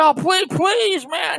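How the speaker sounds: mock tearful, pleading, very high-pitched. Retelling a bus passenger who missed his stop begging the driver: imitating someone crying.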